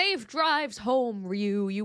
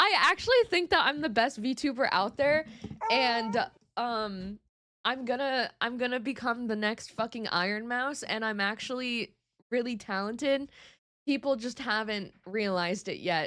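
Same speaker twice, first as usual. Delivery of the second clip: ordinary talk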